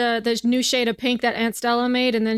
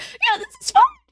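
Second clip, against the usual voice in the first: very high, tight, clipped delivery; 3 dB louder than usual. A game master voices the characters agreeing, in a tight clipped voice. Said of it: "that very tight clipped voice like".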